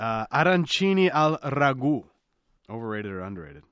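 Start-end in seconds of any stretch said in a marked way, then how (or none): 0.0-2.0 put-on Italian accent, much higher. Naming a dish for an overrated-or-underrated game, in an Italian accent. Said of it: "throw in the accent".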